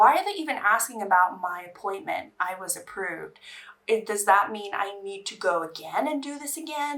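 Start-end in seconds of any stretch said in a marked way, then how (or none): none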